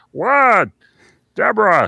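nasal voice, swooping up high in pitch. Showing a voice placed behind the nose: Ray Romano voice. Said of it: "behind the nose".

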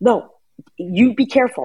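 high-pitched, drawn-out yelled call. A mother retells yelling at her son on the ski lift, re-enacting a yell. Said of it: "I'm yelling at Koi the whole time".

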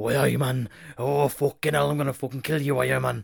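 bad, fumbling put-on Geordie accent. Retelling a wrestler's weird promo, imitating Pac's Newcastle accent.

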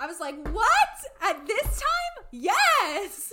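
really excited, high, loud squeal.

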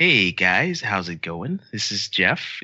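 slow, plain, standard-issue Midwestern dude voice. Urged to do it, the speaker gives a Jeff Jefferson voice a shot.

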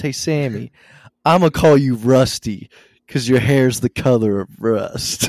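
playful, big, loud ribbing call. Retelling a line from a wrestling show in Riddle's voice. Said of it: "you gotta picture this in Riddle's voice".

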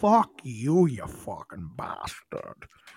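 full Scottish accent with swinging, swooping pitch. Repeating the line right after the other speaker, in a Sean Connery impression. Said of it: "Did you know I could do perfect Scottish?".

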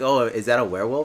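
ordinary talk, nothing marked

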